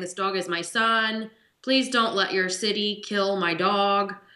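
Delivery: put-on crying man's tearful, pleading voice. Speaker retells a dog owner's plea on the phone, imitating him crying. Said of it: "so he's crying on the phone saying".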